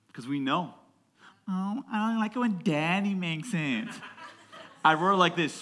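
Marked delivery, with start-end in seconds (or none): 1.4-3.8 put-on fussy, picky little child voice, complaining. Preaching about spiritual immaturity, imitating a picky baby. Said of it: "in the same way that babies go".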